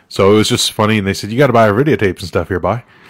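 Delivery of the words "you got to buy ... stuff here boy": put-on Newfoundland (Newfie) accent. Retelling what the company's sellers said: imitating a newfoundland accent. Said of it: "mainly Newfies".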